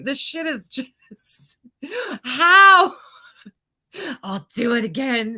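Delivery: talking through laughter. Reacting to a clip and thanking chat, laughing while talking. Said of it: "I've completely lost it at this point".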